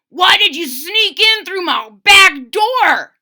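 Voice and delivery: very loud, high-pitched growling voice. Narrator reads a groundhog confronting someone who sneaked in: growling groundhog voice. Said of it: "He growled".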